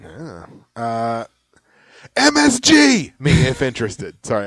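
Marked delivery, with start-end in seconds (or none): 2.2-4.2 high, loud yell, every word hit like capitals. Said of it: "I had to yell at you guys".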